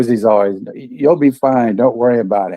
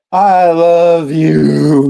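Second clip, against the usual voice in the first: put-on sloppy, high drunken yell, level tone, "you" drawn out; 6 semitones higher, 4 dB louder than usual. Retelling a drunk man yelling at the robot on screen: imitating someone yelling. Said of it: "at one point he was yelling".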